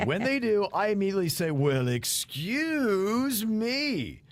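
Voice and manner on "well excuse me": goofy put-on voice, drawn-out me. Telling what they say whenever one of the kids lets one out: goofy voice. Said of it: "In a goofy voice".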